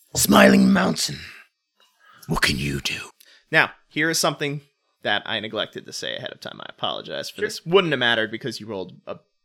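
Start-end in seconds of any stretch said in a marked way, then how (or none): 0.2-3.0 put-on very deep, low, grizzled ancient old master voice. The game master voices the old trainer addressing a player mid-fight: grizzled old trainer voice. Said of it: "He is an earth dragon blood, so he's very hardy. He's very grizzled. He's seen a large number of wild hunts. Okay. And he is one who now, in his advanced years, many centuries, you can see the lines i".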